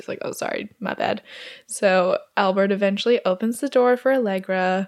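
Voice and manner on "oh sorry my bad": put-on strangled choking voice, quieter. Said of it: "can't breathe".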